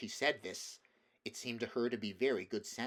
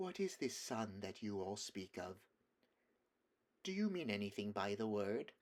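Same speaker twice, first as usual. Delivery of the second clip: soft, dove-like cooing witch voice; 5 dB quieter than usual. Reading a story aloud, voicing the witch's question: cooing softly like a wood pigeon. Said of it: "cooing softly like the voice of a wood pigeon".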